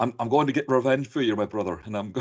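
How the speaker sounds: put-on Irish accent. Retelling a villain's lines from a movie: imitating Patrick Kilpatrick's Irish accent. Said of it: "if you're doing an Irish accent".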